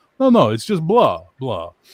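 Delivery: loud, booming, slow, drawn-out puppet voice, swooping each word. Retelling a puppet short where a character greets Greg: Count from Sesame Street voice. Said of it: "he's the Count from Sesame Street".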